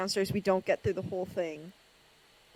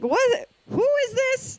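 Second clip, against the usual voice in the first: much higher, baffled dim-witted reaction, squealed. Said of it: "my dumbass was like".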